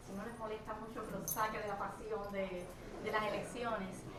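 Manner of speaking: very soft, barely audible voice.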